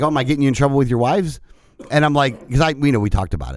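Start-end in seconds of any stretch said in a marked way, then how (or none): none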